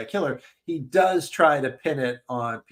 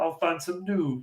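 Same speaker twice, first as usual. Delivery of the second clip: soft felt-puppet cartoon frog character voice; 4 semitones higher, 5 dB quieter than usual. A speaker imagines a sequel tease, voicing Wadsworth in a Kermit the Frog voice. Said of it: "I don't know why he's Kermit the Frog".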